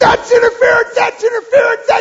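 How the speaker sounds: very high, shrill, top-of-the-lungs full-voice yelling. Acting out the Yankees' second baseman at the umpire, imitating yelling at the top of his voice. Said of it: "yelling at the umpire at the top of his voice".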